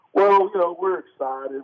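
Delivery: put-on football coach drawl. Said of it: "I don't know why I added the accent".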